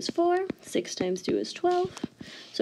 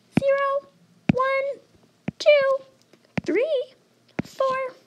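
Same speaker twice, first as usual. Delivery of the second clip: very high, loud voice; 5 dB louder than usual. Counting up the numerator while explaining fractions, in a high voice. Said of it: "in a high voice".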